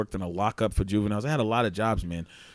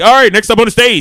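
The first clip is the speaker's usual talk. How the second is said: extra-loud, very high club emcee hype voice; 12 semitones higher, 16 dB louder than usual. Retelling how the show's host announced the show, imitating a strip club DJ voice. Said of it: "like a strip club D J".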